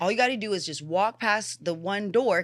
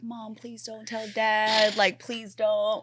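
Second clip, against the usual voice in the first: slow, tearful pleading through crying and sobs; 3 semitones higher than usual. Retelling pleading with mom while crying: retelling crying plea. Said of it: "bawling my eyes out 'cause I was like".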